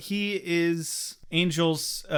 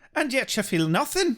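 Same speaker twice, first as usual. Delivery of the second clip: bad put-on Irish brogue, higher pitch; 6 semitones higher than usual. Recapping a show scene, doing Angelus's reply in a bad Irish accent. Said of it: "they've all got terrible Irish accents".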